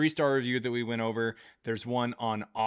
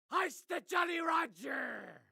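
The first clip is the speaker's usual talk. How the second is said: put-on comic cartoon pirate voice; 8 dB quieter than usual. Speaker asks the cartoon pirate whether it likes the jokes; cartoon pirate voice. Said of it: "our good old friend the cartoon pirate".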